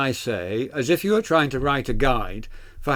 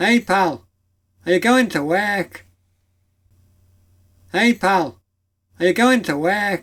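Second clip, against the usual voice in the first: high, exaggerated put-on Liverpool Scouse accent; 6 semitones higher, 4 dB louder than usual. Demonstrating regional British accents one after another, Liverpool Scouse accent. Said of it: "Let's go to Liverpool".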